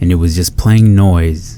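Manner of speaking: ordinary talk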